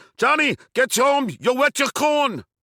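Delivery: put-on very high yell in a Danish accent. Retelling how mom yelled at them from a car's back seat, yelling in a Danish accent. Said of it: "yells in a Danish accent".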